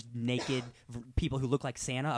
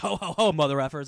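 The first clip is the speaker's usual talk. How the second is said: loud, raised yell; 4 semitones higher, 7 dB louder than usual. Retelling a christmas movie scene with murders: imitating someone yelling. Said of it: "he's just yelling".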